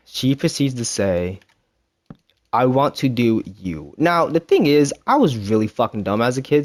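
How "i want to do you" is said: mock calmest voice, slow, utterly calm. Retelling what the person being dated said: imitating the calmest voice. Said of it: "with the calmest voice ever".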